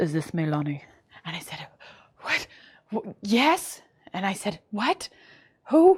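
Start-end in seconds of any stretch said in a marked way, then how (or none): 0.0-0.8 put-on heavy, thick Russian accent, very low, soft. Retelling a late-night phone caller asking for the speaker, in a thick Russian accent. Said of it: "this thick, like Russian accent".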